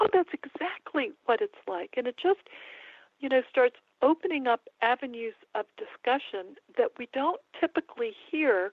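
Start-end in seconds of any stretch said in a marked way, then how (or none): 0.0-1.9 mock worked-up, eager, excited, swooping exclamation. Quoting a gentleman at a conference who got all excited, retelling an excited exclamation. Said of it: "he got all excited".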